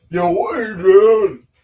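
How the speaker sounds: high, loud, belted-out Chicago accent. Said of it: "think of, think of Rocky".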